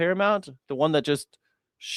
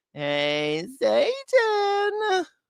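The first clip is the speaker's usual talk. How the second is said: very high, sing-song cartoon voice, Satan drawn out. Joking about a voice from South Park: South Park Saddam Hussein voice. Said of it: "The same voice as Saddam Hussein".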